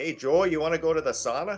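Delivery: Canadian accent and pronunciation. Showing how a word sounds Canadian, Canadian accent. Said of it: "that's kind of sounds like a Canadian word".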